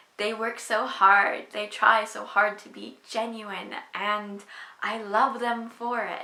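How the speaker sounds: loud, emotional outpouring, voice growing emotional. Looking at a poster of the group they love, emotional. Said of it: "I'm getting emotional over GOT7".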